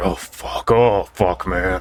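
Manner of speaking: hushed whispering voice. Voicing a lich peeking over the curtains as a player wakes: whispering. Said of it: "you just hear him whisper".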